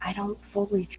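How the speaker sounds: hushed whisper. Player's character secretly speaks to Cogsworth, in a whisper. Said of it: "I'm gonna lower my voice and whisper".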